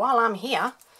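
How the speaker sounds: slight, near-Australian accent. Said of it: "that sounded almost Australian".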